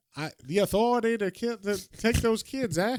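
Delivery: put-on Maine accent. Speaker voices their character who lives in Maine, put-on Maine accent. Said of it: "we're giving him like a southern accent just because they're in Maine".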